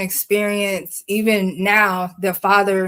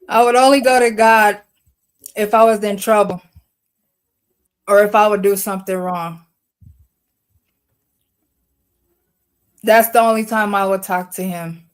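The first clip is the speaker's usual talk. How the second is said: voice fighting back tears; 4 dB louder than usual. Speaker, told by others to go ahead, continuing their story: holding back tears. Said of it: "without crying".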